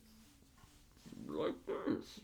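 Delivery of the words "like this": low whispered put-on voice. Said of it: "It's Sean Connery, but".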